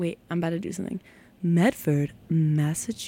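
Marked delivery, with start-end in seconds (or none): 1.4-3.1 synthetic, robotic phone-assistant voice. On the radio, announcing the station's town, Siri voice attempt. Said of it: "I used to have a really good Siri voice".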